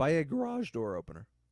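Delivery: voice cracks on a word mid-line. Recounting a movie murder scene on a podcast, voice cracking. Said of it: "That's my first voice crack of the podcast".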